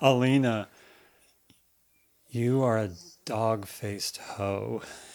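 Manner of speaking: most tender, devoted, soft and heartfelt loving voice. Retelling a man kneeling and holding Alina's hands, in a mock-heartfelt loving voice. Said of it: "he says in the most heartfelt, loving voice that he's ever produced".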